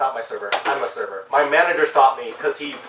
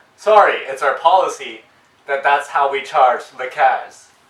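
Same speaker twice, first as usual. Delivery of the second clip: normal talking voice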